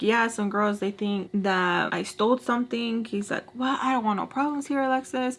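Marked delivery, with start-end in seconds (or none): none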